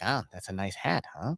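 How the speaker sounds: creepy put-on voice, sinister and menacing. Imitating an old man who sounds like a TV serial killer: creepy serial-killer-like voice. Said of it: "He sounds like the dude in that movie".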